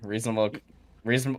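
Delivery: stuttering, tripping and repeating on "reasonable". Trying and failing to say a legal phrase: stuttering. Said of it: "I am stuttering".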